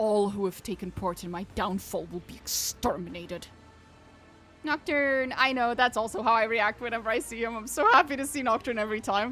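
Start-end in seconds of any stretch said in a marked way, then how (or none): 0.0-3.4 held-back fury, hissed through gritted teeth. A narrator reads an enraged character's threat, hissing through clenched teeth. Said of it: "He hisses through clenched teeth".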